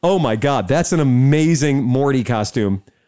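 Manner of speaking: normal talking voice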